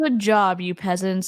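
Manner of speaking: condescending, talking-down tone with sarcasm. Praising those who answered correctly, in a mock-condescending tone. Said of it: "in my condescending tone".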